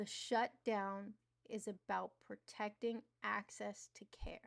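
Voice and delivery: very slow, deliberate, spelled out word by word. Repeating a point to listeners who misunderstood it, spoken super slowly. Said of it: "I'm going to say it super slow".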